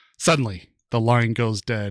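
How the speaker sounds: ordinary delivery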